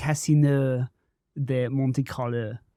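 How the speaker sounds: poor, bad put-on French accent. Asked to say Casino de Monte Carlo in a French accent: bad put-on French accent. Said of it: "How do you say it in a French accent?".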